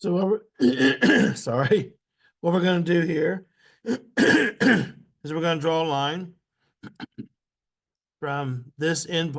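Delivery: choked-up voice with throat clearing.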